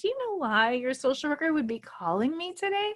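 high, creepy, sweet fake-nice voice. Retelling how she used to talk to the speaker, mimicking an eerie nice voice. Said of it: "she talked to me in this really eerie, nice voice".

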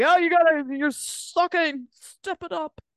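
bullhorn-like yelling. Describing a man on a show yelling at people like a bullhorn: imitating him yelling. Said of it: "him yelling at them like".

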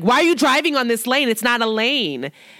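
mock reproachful, mild scolding yell, kept light. Recounting a man who yelled at the speaker while parking, imitating someone yelling. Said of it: "Like he yelled at me like".

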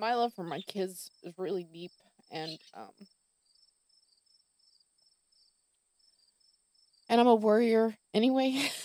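fighting back tears, choked voice. A mother speaking about her love for her kids: holding back tears. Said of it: "giant lump in my throat".

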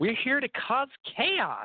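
put-on far too cheerful, very high, swooping sing-song. Mocking a wrestler's promo line: imitating Allie sounding too happy. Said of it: "She just sounds too happy".

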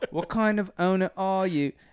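put-on British accent. Performing a practiced line for another speaker: put-on british accent. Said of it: "My British voice".

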